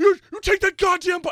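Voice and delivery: shrill, tearful yelling, pitched way up, very loud. Retelling a reaction to a movie scene in a theater: imitating own screaming. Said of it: "screaming at the".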